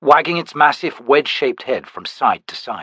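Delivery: ordinary delivery, nothing marked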